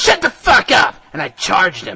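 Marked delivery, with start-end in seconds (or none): 0.0-0.9 very high, loud, all-out screamed outburst. Reading a story where the narrator confronts a villain: screaming. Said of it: "Then I screamed".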